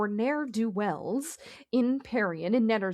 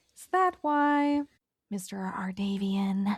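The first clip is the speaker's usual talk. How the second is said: stage whisper that carries; 2 semitones lower than usual. A character questions the man who followed her, in a louder whisper. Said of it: "in a bit of a louder whisper".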